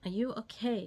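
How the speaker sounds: put-on very sweet, tender, doting, loving voice. Retelling a husband asking after a fall: imitating a sweet, loving voice. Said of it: "asked in a very sweet and loving voice".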